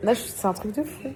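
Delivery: tearful, crying, high voice, tears breaking through.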